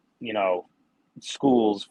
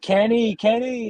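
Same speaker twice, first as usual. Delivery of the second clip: high, loud yell. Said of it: "they were yelling".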